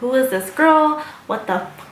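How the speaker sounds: playfully sarcastic, joking, acted-out indignation. Retelling a joking skit with a friend about another girl, retelling a sarcastic joke. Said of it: "just being sarcastic".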